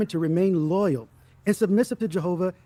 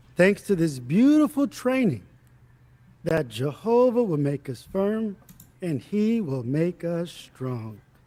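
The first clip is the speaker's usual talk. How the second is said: extremely slow, every word stretched out. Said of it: "It's genuinely difficult to talk as slow as this guy talks".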